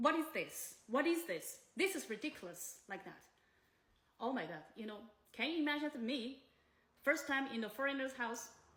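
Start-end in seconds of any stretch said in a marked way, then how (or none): none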